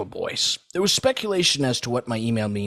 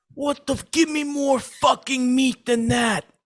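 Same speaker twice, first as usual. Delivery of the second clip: mock enraged, furious, shrill screeching scream; 14 semitones higher, 4 dB louder than usual. Retelling a Chipotle customer's complaint about her burrito filling, imitating a woman screaming furiously. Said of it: "she starts screaming".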